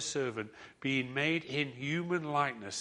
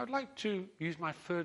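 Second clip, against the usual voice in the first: higher, put-on storybook talking-fish voice; 5 semitones higher, 4 dB quieter than usual. Storyteller voicing the man speaking to the fish, accidentally in the fish voice. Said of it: "that's the fish voice".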